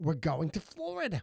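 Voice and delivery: put-on Yiddish-inflected accent.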